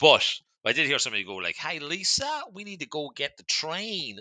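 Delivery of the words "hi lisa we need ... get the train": put-on very slow, tentative American accent, pitched up. Retelling what someone was overheard saying, imitating an American accent. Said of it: "I'm going to try and hope that that was American".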